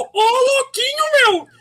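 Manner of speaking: high-pitched, loud crying. Joining in on the Faustinho bit: Faustão impression. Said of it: "O Faustinho".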